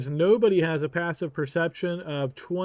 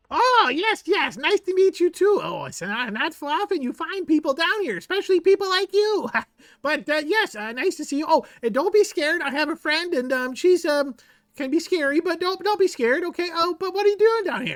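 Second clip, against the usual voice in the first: very high-pitched little creature voice; 11 semitones higher than usual. Voicing a kobold introducing himself to the party: Jiro the kobold voice. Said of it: "this kobold face emerges".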